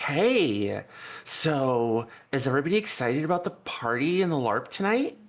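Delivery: bubbly, sparkly, perky chirp with drawn-out so. Narrating a scene where a character greets the others: sparkly, perky voice. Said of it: "perky voice is like".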